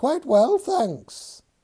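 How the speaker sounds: very high, little, squeaky put-on voice. A man makes a shoe answer him, in a high-pitched voice. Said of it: "in a high-pitched voice".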